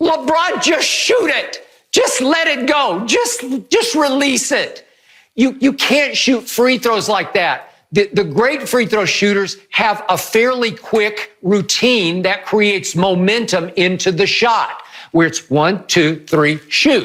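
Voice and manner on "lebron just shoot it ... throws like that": put-on high-pitched, loud yell. Retelling watching LeBron at the free throw line, retelling screaming at the TV. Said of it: "And I'm screaming at my T V".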